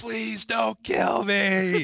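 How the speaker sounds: loud, high-pitched yelling at the top of the lungs. Retelling a friend's scare, re-enacting yelling as loud as possible. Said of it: "But I yelled as loud as I could".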